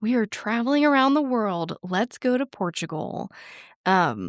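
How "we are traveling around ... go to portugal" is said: cheesy, ecstatic, pitched-up delivery. Reading out a cheesy segue from own notes: mock ecstatic. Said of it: "to sound that ecstatic".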